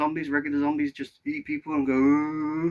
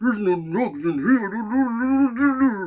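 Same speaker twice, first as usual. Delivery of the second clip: loud, booming villain voice, drawn out here; 7 semitones higher, 5 dB louder than usual. Talking about The Dark Knight Rises, the speaker does a Bane voice. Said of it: "I can do his voice as well".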